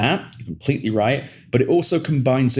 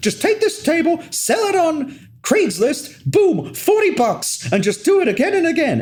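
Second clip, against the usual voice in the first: imitated yelling, higher pitched. Retelling a video of Gary Vee in a bar: imitating Gary Vee yelling. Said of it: "he is just yelling at these four guys going".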